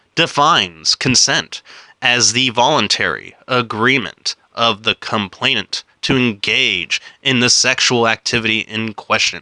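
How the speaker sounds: slow, careful, deliberate word-by-word reading. Reading a legal definition aloud after stumbling over it, reading it slow. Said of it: "I'm gonna read it slow".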